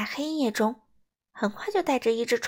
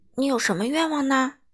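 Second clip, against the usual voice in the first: plain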